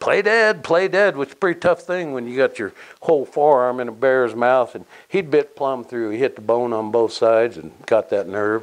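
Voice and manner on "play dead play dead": very high, repeated hollering. Recounting a bear attack, quoting the man up the tree, retelling someone hollering. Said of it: "finally he's hollering".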